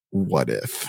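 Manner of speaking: deep, soft put-on bass.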